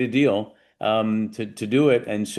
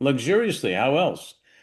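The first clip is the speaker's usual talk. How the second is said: really sarcastic, acted-out delivery; 3 semitones higher than usual. Retelling his answer to the executives' question: retelling a sarcastic reply. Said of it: "I was really sarcastic back then".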